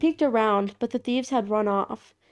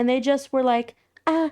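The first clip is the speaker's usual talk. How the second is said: ordinary talk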